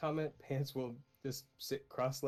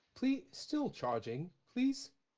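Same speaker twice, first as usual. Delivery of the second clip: mechanical, machine-like voice with swooping pitch; 9 semitones higher than usual. The metal companion, roused while still charging, answers in a more mechanical voice. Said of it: "Definitely sounds more mechanical".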